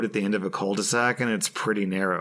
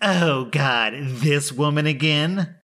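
slow, pitched-up, drawn-out put-on tipsy drunk voice; 6 semitones higher, 4 dB louder than usual. Retelling a neighbor answering the door again, imitating a drunken reply. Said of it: "she answers with a drunken".

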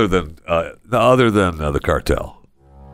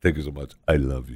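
put-on deeper voice, much lower and quieter; 5 semitones lower, 7 dB quieter than usual. Friends recreating a video, one mimics the person's voice: imitating someone's deeper voice. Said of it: "it's like I'm listening to this person again".

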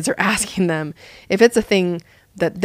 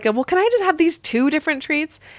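sugary, sweet-as-pie voice, pitched high; 8 semitones higher than usual. Retelling a story, the parent imitates the son's request, mock super-sweet asking. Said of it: "my son asked super sweetly".

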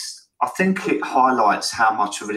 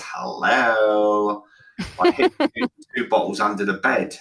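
swooping demon voice, "hello" stretched long. Recounting secret drinking, the speaker replies to a question in a demon voice. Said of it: "it's like my demon voice".

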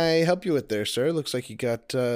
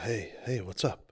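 soft, low, hushed whisper. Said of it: "I thought we were whispering".

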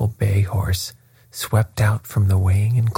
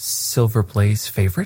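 plain reading voice

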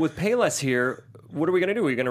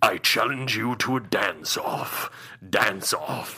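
put-on ominous bad guy voice, lower; 5 semitones lower than usual. Joking that the villain's line sounded like a dance-off challenge: hilariously ominous Shredder voice. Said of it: "it totally sounded like".

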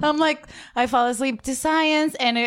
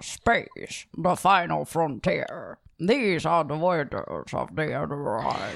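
very low, slow, drawling toothless voice; 7 semitones lower, 4 dB quieter than usual. Quoting the space opening in an old toothless Sean Connery voice. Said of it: "old Sean that has no teeth".

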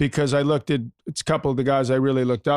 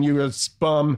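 ordinary talk, nothing marked

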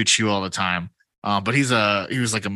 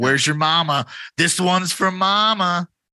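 put-on high taunting scream, "mama" stretched out; 8 semitones higher than usual. Describing a batter at the plate, the speaker acts out him screaming at Henry: retelling a scream. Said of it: "He's like screaming at Henry".

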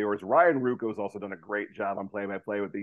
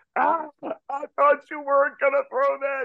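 very high-pitched, loud yelling; 7 dB louder than usual. Retelling a batter yelling at the pitcher while running to first: imitating Paul Hall yelling. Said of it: "yelling at him".

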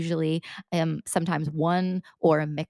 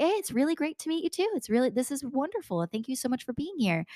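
much higher and quieter voice; 8 semitones higher, 3 dB quieter than usual. Coaching on mirroring a new contact's voice, demonstrating matching a higher cadence. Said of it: "then you're going to be like".

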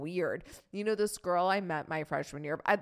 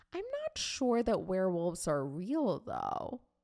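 dead earnest, wholly sincere, swooping tone. Retelling a conversation with Mom: imitating her deep earnestness. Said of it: "she says this with such a level of deep earnesty".

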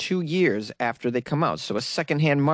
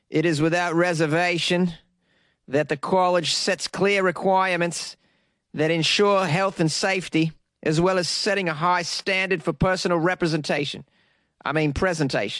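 bad fake Australian accent, higher pitched; 3 semitones higher than usual. Reading a quote from a college newsletter: bad put-on Australian accent. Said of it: "I'm gonna do it in, in an Australian accent".

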